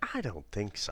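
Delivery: acted child voice full of attitude. Praising a child actor's line delivery, imitating Macaulay Culkin's attitude. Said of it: "that kind of attitude of".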